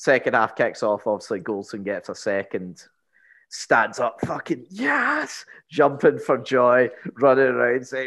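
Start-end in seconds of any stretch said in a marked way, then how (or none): 4.2-5.4 put-on pitched-up, slow Scottish accent. Retelling a match, a man jumps up celebrating a goal: Scottish accent. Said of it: "fixed Scottish accent".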